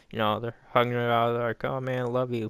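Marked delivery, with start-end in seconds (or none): none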